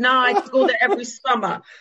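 heavy, high, fake try-hard New York accent. Retelling a guy who faked being from New York, imitating Prosper's heavy accent. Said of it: "met this guy who had a heavy accent".

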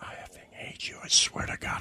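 soft, sinister whisper.

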